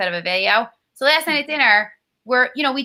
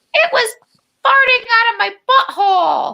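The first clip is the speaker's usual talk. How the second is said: tiny, very high, drawn-out squeaky voice; 11 semitones higher, 5 dB louder than usual. Retelling a boy's line called from the other room: imitating a squeaky little voice. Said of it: "a squeaky little voice, like it was her".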